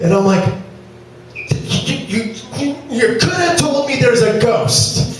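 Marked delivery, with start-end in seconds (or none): 1.3-5.2 mock stuttering, high, shaken, nervous stammer. Retelling what he said to his coworkers after seeing a ghost, put-on shaken stammer. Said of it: "I'm still shaking".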